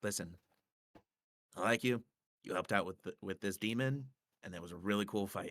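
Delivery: soft, hushed, confiding secret-sharing tone. Playing a character in a game, coming up to her to speak in a hushed tone. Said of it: "give it in like a hushed tone".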